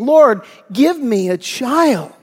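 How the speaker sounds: acted, slow, imploring and begging voice. Acting out a desperate woman's prayer for a child: Hannah pleading in prayer. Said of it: "she's pleading".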